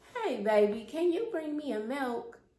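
sweet, casual tone. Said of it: "she'll be like".

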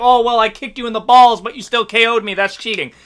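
ordinary talk

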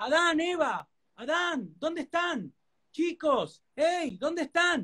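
high, slow calling voice of a god.

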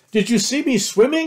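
very high, loud, thrilled, excited little squeak. A young one just out of the stream asks the others: squeaking excitedly. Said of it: "Squeaked Roo excitedly".

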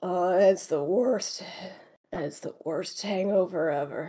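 muttered speech. Narrating a character who groans, sits up and pinches his nose: mumbling. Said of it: "and mumbles".

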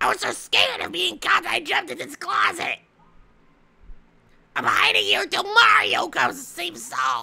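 put-on very high, congested little voice, swooping and rough. Toad tells Princess Peach why he hid in the closet: congested Toad voice. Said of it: "This toad sounds congested".

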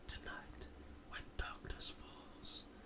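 hushed, dramatic, barely voiced whisper. Retelling a wrestler's promo while recapping it: imitating a whisper. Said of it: "Now he whispers".

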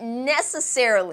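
necessarily stressed with a light pitch lift.

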